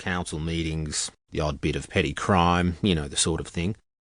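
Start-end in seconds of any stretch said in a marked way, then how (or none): none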